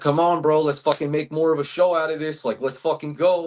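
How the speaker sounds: frustrated, high yelling. Retelling yelling at a fighter who dropped too quickly: retelling a yell. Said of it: "I was sitting there fucking yelling at him".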